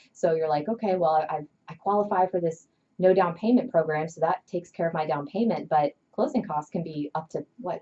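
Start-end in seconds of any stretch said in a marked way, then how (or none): none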